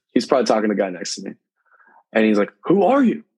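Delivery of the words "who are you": put-on drill instructor screaming at very high pitch. Retelling how a company commander screamed at him: imitating someone screaming. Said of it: "he just, just screams it".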